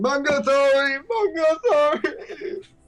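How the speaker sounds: very high, sobbing, crying through the words. Voicing a character apologizing after a bite attempt, crying. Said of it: "Mungo is crying and saying".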